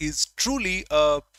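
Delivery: "truly" heavily stressed and said loud. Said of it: "emphasis on the word truly".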